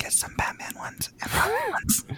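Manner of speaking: soft, hushed whisper. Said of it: "I have to whisper".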